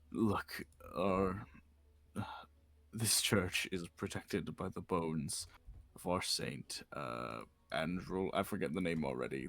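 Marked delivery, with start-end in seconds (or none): 0.1-8.3 slow, hushed stage whisper. Voicing a priest warning the party about the church: hushed half-whisper. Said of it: "in a hushed whisper".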